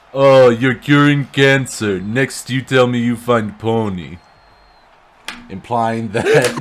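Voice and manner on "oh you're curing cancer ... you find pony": put-on Russian man voice. Quoting a line from a parody dub as the Russian guy: Russian guy voice. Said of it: "Russian guy".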